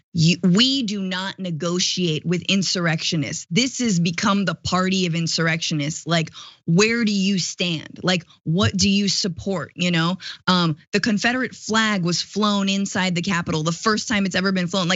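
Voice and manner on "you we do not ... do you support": ordinary talk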